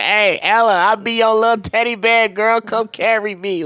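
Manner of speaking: put-on high, loud, screaming, hollering cheering. Retelling cheering at a basketball game from good seats: retelling a scream. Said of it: "I was screaming".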